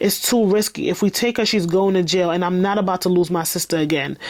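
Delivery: ordinary delivery, nothing marked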